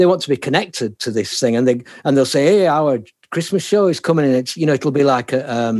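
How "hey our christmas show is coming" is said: put-on plain northern Yorkshire accent. Retelling what a radio station says about its show: Yorkshire accent. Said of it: "you sounded so Yorkshire".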